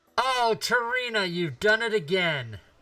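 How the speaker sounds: deliberately very loud, high, overdone and showy. A player calls out to get the attention of people downstairs, obviously loud. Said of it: "in an obviously loud voice".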